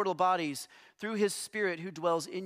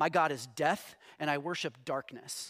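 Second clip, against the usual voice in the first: low, foreign-sounding broken English phrasing; 4 semitones lower than usual. Retelling a man named Peter introducing himself, imitating Peter's broken English. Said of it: "in like this broken English".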